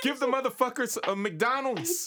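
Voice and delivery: mock yelling. Retelling what they used to shout at TV charity ads: imitating own yelling. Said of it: "would always be yelling at the T V".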